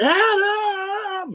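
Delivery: very high, long, stretched-out yelled call. Retelling calling out when the crowd died down during the match, retelling a yell. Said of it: "I just yelled out".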